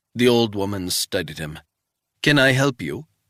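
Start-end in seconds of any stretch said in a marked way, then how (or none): 2.2-3.0 put-on heavy, thick, laid-on Swiss accent. Reading a story, voicing an old woman questioning a visitor, thick Swiss accent. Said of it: "she said in a thick Swiss accent".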